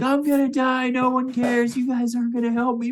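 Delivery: panicked screaming. Voicing a patient freaking out as someone walks in: screaming patient. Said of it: "he is just screaming".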